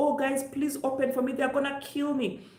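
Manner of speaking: put-on crying and screaming, high-pitched tearful pleading. Retelling a man chased by cops, begging people to open: imitating crying and screaming. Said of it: "cry and screaming his lungs out".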